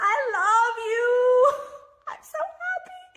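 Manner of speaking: borderline manic joy, high-pitched and very drawn out. Telling viewers they waited so long for this: borderline manic elation. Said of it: "borderline manic, just, like, elated".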